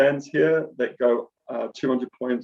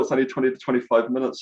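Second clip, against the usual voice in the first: a little quick, fast, rushed talk. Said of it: "I'm talking a little bit quick".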